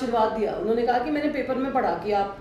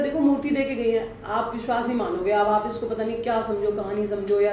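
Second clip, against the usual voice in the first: usual speaking voice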